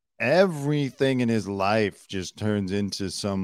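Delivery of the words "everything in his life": usual speaking voice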